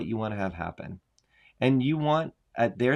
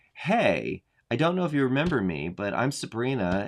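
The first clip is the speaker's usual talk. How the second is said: ordinary talk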